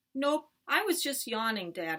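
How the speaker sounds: ordinary delivery, nothing marked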